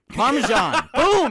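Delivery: very loud, high-pitched mock chef voice yelling.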